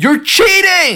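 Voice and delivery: mock, sudden, piercing, very high scream. Retelling a film scene where santa leaps out: imitating santa screaming. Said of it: "Santa leaps from behind the back seat and screams".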